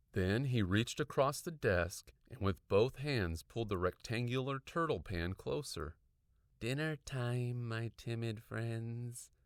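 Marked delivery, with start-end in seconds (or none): 6.5-9.2 grating, scratchy, rasping voice. Reading a story aloud, a teacher speaking to his turtles: high, scratchy voice. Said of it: "in his high, scratchy voice".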